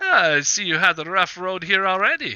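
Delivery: knowing, amused voice, high and loud.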